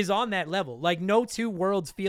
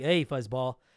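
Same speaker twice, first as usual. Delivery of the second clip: mock sarcastic voice, lower; 6 semitones lower than usual. Imitating a game's weapons dealer greeting the player: imitating a sarcastic character. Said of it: "he's so sarcastic".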